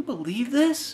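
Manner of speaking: hushed, slightly high, murmured stage whisper. Acting out a moviegoer leaning over to a friend: imitating someone half-whispering. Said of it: "he's just whispering over at Kyle's like".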